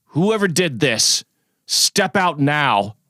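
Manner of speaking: restrained, high, mild bellow. In a role-playing game, the player's character speaks out, bellowing. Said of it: "So I I bellow".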